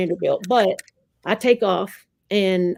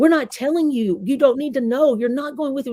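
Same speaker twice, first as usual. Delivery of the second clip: mock-angry, put-on shouting, pitched higher; 6 semitones higher than usual. Speaker recounts the men refusing to say where he's taken, retelling men's angry yelling. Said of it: "angry discussion between these men".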